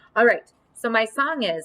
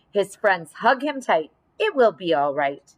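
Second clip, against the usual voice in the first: ordinary delivery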